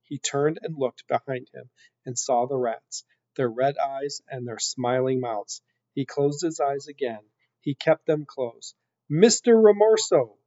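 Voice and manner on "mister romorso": urgent, loud, high shout. Narrator reads a character shouting a name with his eyes closed, shouted. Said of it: "he shouted".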